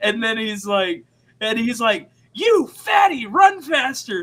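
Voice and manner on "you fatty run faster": put-on loud, drawn-out yelling. Retelling a gym teacher yelling at little kids: imitating Coach yelling.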